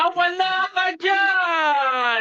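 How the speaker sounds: high, slow, shouted teasing tone.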